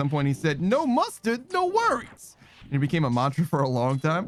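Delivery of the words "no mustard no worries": put-on strong, heavy New Jersey accent. Retelling what a sandwich maker said: imitating a strong New Jersey accent. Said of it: "the most Jersey accent you could ever heard".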